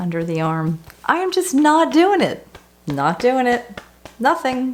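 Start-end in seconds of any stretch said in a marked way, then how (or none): 1.0-4.8 sarcastic, put-on bright sing-song, pitched up. Leading a tapping exercise with a huge fake smile: sarcastic, with big fake smile. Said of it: "I call this the sarcastic smile technique".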